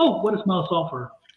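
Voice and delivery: ordinary talk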